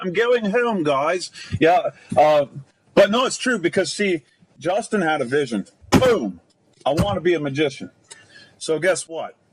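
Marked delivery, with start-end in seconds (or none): 0.0-1.3 borrowed, put-on British accent, pitched up. Showing how they say it when they're tired, british accent. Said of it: "And they do it with a British accent, just like that".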